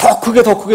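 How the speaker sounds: high, loud urging.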